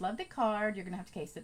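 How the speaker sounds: ordinary talk, nothing marked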